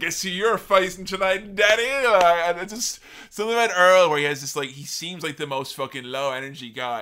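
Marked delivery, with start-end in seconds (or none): 0.0-2.1 excited voice, pitched up high. Retelling a story, quoting a dancing, strutting referee: imitating Earl Hebner strutting excitedly. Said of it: "dancing around, like, strutting".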